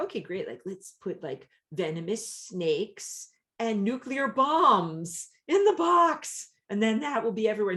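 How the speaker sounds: high, loud, facetious, tongue-in-cheek put-on earnest voice. Acting out a careless wish for the magic box: put-on facetious tone. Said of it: "you can tell by my voice that I'm being facetious".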